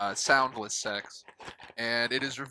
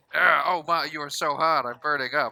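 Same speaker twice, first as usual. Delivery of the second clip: put-on loud fake moans, higher and louder; 4 semitones higher, 6 dB louder than usual. Retelling Frasier jumping on the bed: imitating Frasier faking loud sex sounds. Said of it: "I'm gonna fuck super loud".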